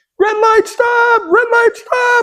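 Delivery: put-on upset child shrieking, very high. Retelling the drive home, imitating the upset girl screaming. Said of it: "And she's screaming".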